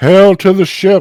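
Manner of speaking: very high, very loud, booming, echoing, ringing shout. A character hails a ship, voice magically amplified, magically amplified loud hail. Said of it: "using thaumaturgy to make their voice louder".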